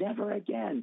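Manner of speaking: high, forceful shouted yell. Retelling running up and hitting a man in the chest, re-enacting his own yell. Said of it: "And I'm yelling".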